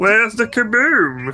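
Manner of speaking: high-pitched cartoon space alien voice. Quoting a favorite cartoon line, in a Marvin the Martian voice. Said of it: "one voice I can actually do is Marvin the Martian".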